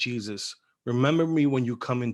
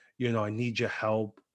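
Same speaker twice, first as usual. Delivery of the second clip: usual speaking voice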